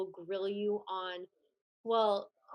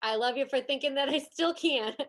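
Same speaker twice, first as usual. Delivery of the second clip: clumsy, bad Minnesota accent, high and loud; 5 semitones higher, 6 dB louder than usual. Quoting a film character's line in a bad minnesota accent. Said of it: "a Minnesota accent, and it's coming out really bad".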